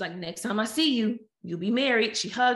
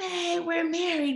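mock all-excited, thrilled, pitched-up tone; 8 semitones higher than usual. Retelling what the husband said after the wedding, imitating someone excited. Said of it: "he was all excited".

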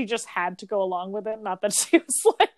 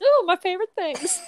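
mock-gushing sarcasm, pitched very high; 9 semitones higher, 5 dB louder than usual. Speaker retells Blanche's reply to the St. Olaf story: sarcastic Blanche impression. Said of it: "Blanche just sarcastically goes".

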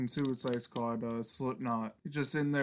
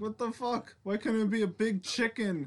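high, panicked, pitched-up blurted outburst; 9 semitones higher than usual. Imitating Guy Fieri suddenly facing a giant squid: imitating Guy Fieri panicking. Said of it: "It's like".

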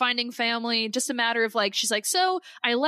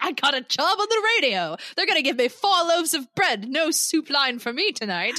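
over-the-top, hammy, theatrical, overly dramatic delivery; 3 semitones higher than usual. Recounting a scene where a man tells her what happened, imitating an overly dramatic voice. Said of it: "who also has a very overly dramatic voice".

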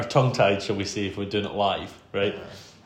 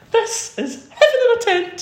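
ultra-camp squeal, very high-pitched and very loud; 9 dB louder than usual. Retelling walking into the goat tent on video, in the campest voice possible. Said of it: "in the campest voice possible".

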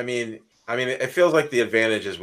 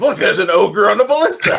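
blurted out, very loud, very high and shrill; 10 semitones higher, 10 dB louder than usual. Player voicing Grim, who blurts out on a failed roll, as Grim blurting it out. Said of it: "he clearly says".

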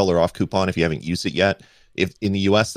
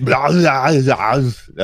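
high, raised put-on voice, belted out loud; 7 semitones higher, 7 dB louder than usual. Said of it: "Sounded like Arnold Schwarzenegger".

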